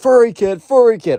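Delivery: very high, loud, shrill yell. Retelling a teacher yelling at a student in class: retelling a teacher yelling. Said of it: "So the teacher's yelling".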